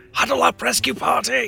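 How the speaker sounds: hushed stage half-whisper call. Gathering the rescue party into a huddle: half-whispering. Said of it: "Why are we whispering?".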